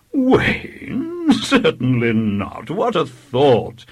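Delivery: feigned horror, cried out, swooping and slow. Narrator reads the vicar answering a child's claim: mock horror. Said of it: "cried the vicar in mock horror".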